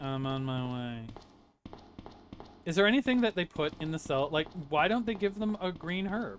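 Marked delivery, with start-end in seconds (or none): 0.0-1.1 very slow, utterly and obscenely bored tone. Mimicking Claire, who sounds really bored: mock-bored, imitating Claire. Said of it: "She sounds really bored. Claire sounds like obscenely. She's like".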